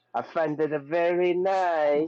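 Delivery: put-on slow high Italian accent. Repeating own words back in a joke: imitating an italian accent. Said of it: "He said that like an Italian".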